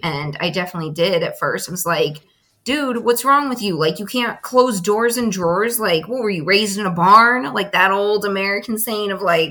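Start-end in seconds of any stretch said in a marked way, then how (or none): 2.6-7.5 belittling, unkind, rude, mean nagging scolding tone. Retelling how they once scolded a partner: imitating own past rude scolding. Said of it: "communicate it in a very unhealthy way".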